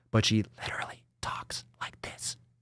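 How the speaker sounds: put-on soft, unvoiced, creepy whisper.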